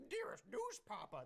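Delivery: strange, high-pitched put-on voice. Telling Cody what he sounds like: imitating Cody's weird voice. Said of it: "in that weird voice of yours ... that's what you sound like".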